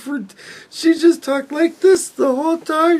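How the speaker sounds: mock voice on the verge of crying. Show how she talked whenever a Democrat spoke to her, imitating someone on the verge of crying. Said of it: "talked like this ... sound like she was on the verge of crying".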